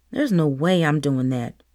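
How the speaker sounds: muttered aside. A girl in class reacting to the teacher's sprint plan, muttered. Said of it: "muttered [name]".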